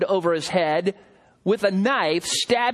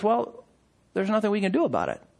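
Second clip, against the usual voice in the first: casual, nonchalant, unbothered tone; 3 dB quieter than usual. Acting as a dispatcher answering an emergency call: nonchalant. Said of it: "very nonchalantly".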